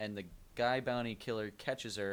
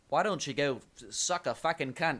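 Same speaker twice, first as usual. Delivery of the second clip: loud, drawn-out, put-on Australian accent; 4 semitones higher, 7 dB louder than usual. Retelling a scene, quoting a character who is Australian: Australian accent. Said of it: "And he's Australian, so he's like".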